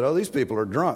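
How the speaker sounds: usual speaking voice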